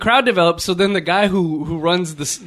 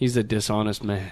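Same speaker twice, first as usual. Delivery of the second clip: mock muttering, lower and quieter; 9 semitones lower, 7 dB quieter than usual. Retelling a comment made under the breath to a friend: imitating muttering under breath. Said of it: "beneath my breath".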